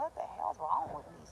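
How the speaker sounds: put-on, full-on griping, complaining tone. Retelling own past words from when complaining a lot: retelling own complaining. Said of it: "'cause I used to be complaining mega".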